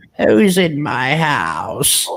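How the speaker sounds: put-on raspy, gravelly old woman voice, pitched high. Retelling a voice heard on an EVP recording, gravelly old woman's voice. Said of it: "that gravelly old woman's voice go".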